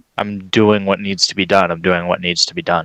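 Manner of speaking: repeated, low, mumbled mutter under the breath. Reassuring oneself in character while confused: muttering under breath. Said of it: "I'm gonna mutter under my breath".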